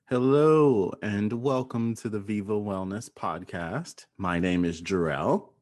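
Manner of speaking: slow, deliberate zen delivery. Opening the podcast and introducing yourself, slow and intentional. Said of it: "You said that very like intentionally today. Slowly".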